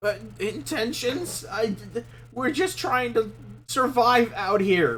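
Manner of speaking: frightened, scared-stiff, high-pitched voice. A player's character answers a question about intentions, terrified. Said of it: "pissing their pants right now".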